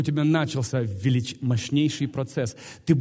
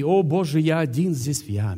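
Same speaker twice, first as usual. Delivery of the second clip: ordinary talk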